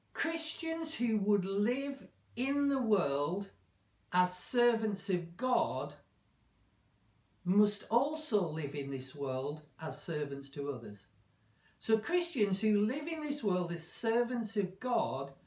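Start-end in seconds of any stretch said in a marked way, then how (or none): 0.1-11.0 slow, measured, deliberate, word-by-word delivery. Speaker stating the conclusion drawn from a passage, slow and deliberate. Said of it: "let me say this slowly".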